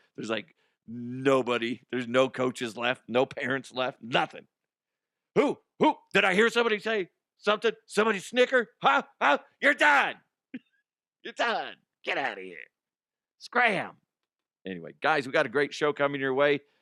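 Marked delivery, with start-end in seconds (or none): 5.4-13.9 high, swooping, ranting umpire yelling. Acting out being an umpire ejecting people: pretend umpire yelling. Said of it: "the umpire that starts yelling at people and ejecting people".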